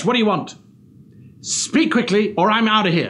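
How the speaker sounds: forceful, impatient voice. Trying out delivery options for demanding lines: pushy aggressive, not angry. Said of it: "Perhaps they're overly aggressive. ... It's not angry, it's just aggressive".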